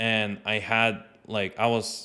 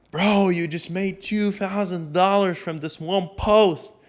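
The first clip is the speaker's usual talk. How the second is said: high-pitched, screamed, yelling delivery; 9 semitones higher, 4 dB louder than usual. Retelling a phone call with news of a big payout: imitating someone screaming. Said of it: "screaming into the phone".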